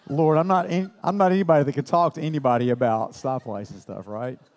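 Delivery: ordinary delivery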